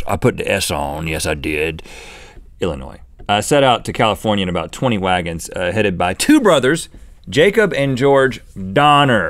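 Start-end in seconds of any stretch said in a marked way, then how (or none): 0.1-1.8 gruff, much lower and slower. Pausing mid-story about the Donner Party travelers, gruff.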